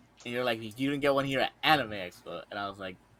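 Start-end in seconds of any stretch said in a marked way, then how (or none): none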